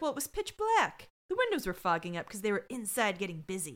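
plain

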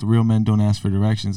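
ordinary talk

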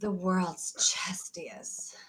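breathy, mock-seductive, sultry whisper. Asked to read a description in the 'porn voice': put-on sultry voice. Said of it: "Should I do it in the porn voice?".

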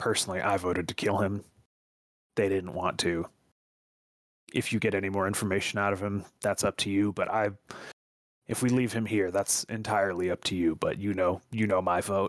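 voice dropped down low, low-pitched. Tabletop player in character giving their vote on the prisoner, lowered voice. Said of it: "I kind of lower my voice even lower".

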